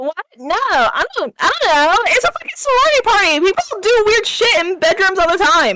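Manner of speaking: flustered, frantic, panicked, stumbling outburst. Playing a sorority girl who finds a stranger in her room: freaking out. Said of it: "her freaking out is cute".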